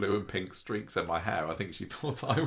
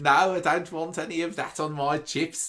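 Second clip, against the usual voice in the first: put-on Birmingham accent; 8 semitones higher, 5 dB louder than usual. Asked to do a birmingham accent, the speaker tries it: birmingham accent. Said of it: "you got to do your Birmingham accent".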